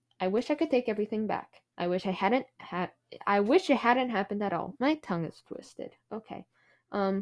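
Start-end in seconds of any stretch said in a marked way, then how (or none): none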